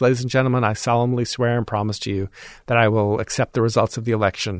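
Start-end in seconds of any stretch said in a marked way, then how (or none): none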